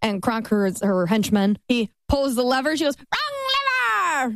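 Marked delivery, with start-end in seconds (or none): 3.0-4.4 crazy wild villain lady voice, very high. Retelling a story scene after the henchman pulls the lever, crazy voice. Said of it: "she's got this crazy voice".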